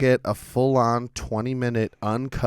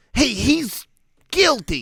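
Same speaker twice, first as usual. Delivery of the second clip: put-on New York accent, pitched very high; 12 semitones higher, 4 dB louder than usual. Imitating a raspy-voiced prosecutor: imitating a New York accent. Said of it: "Did she have, like, a New York accent?".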